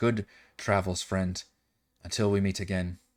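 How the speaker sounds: very soft. A storyteller voices a character's farewell to a departing friend, much quieter. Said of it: "much quieter".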